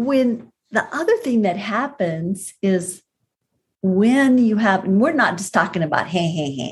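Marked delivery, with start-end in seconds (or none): 6.1-6.7 low, tossed-off sarcastic laugh.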